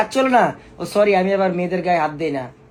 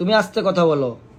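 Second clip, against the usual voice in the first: normal talking voice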